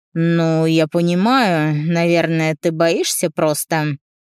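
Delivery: derisive, taunting, mocking, teasing tone. A man offering the narrator a ride on his motorcycle replies to her, mocking. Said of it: "С издевкой".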